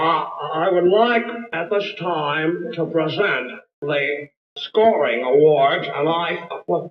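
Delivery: halting put-on movie-star drawl. Presenting the scoring awards: Jimmy Stewart impression. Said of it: "we've already had a Jimmy Stewart impression".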